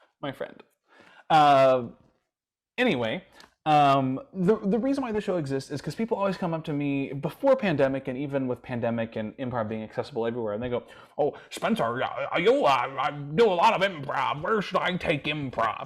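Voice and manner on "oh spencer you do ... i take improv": put-on old wizard character voice. Imitating people who ask where to take improv: Gandalf voice. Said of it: "this Gandalf voice".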